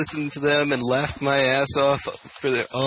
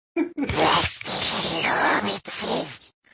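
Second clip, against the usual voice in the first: creature voice, much higher pitch; 4 semitones higher than usual. On a magic podcast, a speaker offers his Gollum impression. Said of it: "here's my impersonation of Golem".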